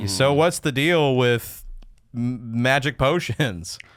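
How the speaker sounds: very slow, drawn-out delivery. Voicing a game character modeled on oneself: Jerry Seinfeld impression. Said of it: "are you Jerry Seinfeld?".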